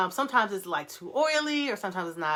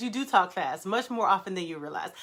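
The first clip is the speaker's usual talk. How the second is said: ordinary talk, nothing marked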